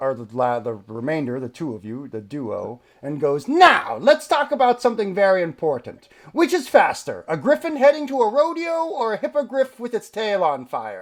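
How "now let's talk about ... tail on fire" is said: shrill, booming, very high, very loud unhinged madman voice. A skeletal dungeon figure turns to the remaining duo: gone insane. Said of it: "He seems as if he's gone insane after centuries of being down here. / He seems as if he's gone insane after centuries of being down here. / He seems as if he's gone insane after centuries of being dow".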